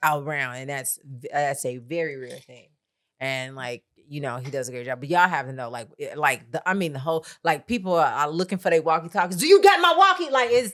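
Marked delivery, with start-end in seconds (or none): 9.4-10.3 put-on pushy, aggressive voice, very high and raised. Retelling crew members asking for their walkie-talkies: imitating an aggressive ask.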